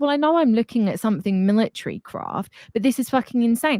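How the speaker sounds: normal talking voice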